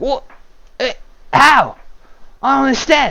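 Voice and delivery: very high, swooping, baffled goblin voice. Voicing a goblin coming around after being stabbed: confused goblin voice. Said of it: "He comes around quite confused".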